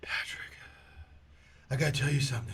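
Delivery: put-on heavy breathing. Retelling speaking drunk onto someone's neck in a truck: imitating heavy breathing. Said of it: "breathing heavy".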